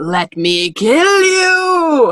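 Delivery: very slow chilling voice. Acting out a line spoken to Harry, in a bone-chilling voice. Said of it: "that was a voice to chill the bone marrow".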